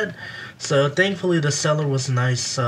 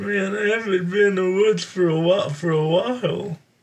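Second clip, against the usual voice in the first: put-on cartoon voice, much higher pitch; 4 semitones higher than usual. Watching a film, describing a man who talks in a Care Bear voice. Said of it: "He's talking like a Care Bear".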